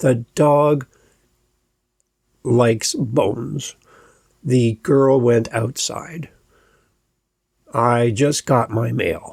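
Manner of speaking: pitch drops at each sentence end: bones, outside, mail. Demonstrating example declarative sentences, falling tone at the end. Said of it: "go down in tone at the end".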